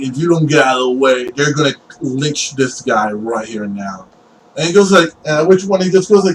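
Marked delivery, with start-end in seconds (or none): none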